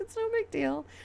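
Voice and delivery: mock very high voice, giggling through the words. Retelling how another player brushed it off, imitating a giggling friend. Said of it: "And she just giggles".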